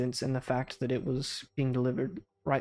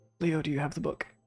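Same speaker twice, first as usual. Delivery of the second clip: hushed whispering voice; 2 semitones higher than usual. Voicing a character leaning across a desk: whispering. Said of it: "he whispers and he says".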